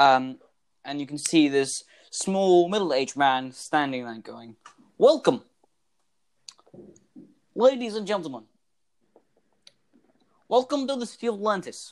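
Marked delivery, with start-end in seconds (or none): 5.0-11.9 put-on vampire accent, pitched high. Retelling a man on stage welcoming the audience, in a Dracula accent. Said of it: "Nice accent you got there. What is this, Dracula?".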